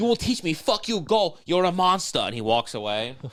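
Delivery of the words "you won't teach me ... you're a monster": put-on French accent, higher and louder. Retelling a TV scene, imitating Frenchie's accent: mock French accent. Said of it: "in his bullshit fucking wah, wah accent".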